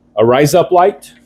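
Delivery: put-on Australian accent. Showing what Australians call making it even: Australian accent. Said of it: "As the Australians call it".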